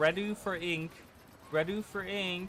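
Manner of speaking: very slow, drawn-out, high loudspeaker announcer voice. Announcing readiness before others come in, like through a loudspeaker. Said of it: "It's like you're saying that through like a loudspeaker".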